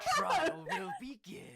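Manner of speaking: put-on slow, drawling, drunk British old grandpa voice.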